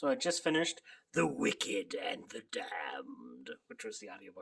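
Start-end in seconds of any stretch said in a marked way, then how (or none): 1.1-4.4 eerie, spooky put-on scary voice with swooping pitch. Speaker greets listeners about a finished audiobook in a scary voice. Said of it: "why are you doing a scary voice?".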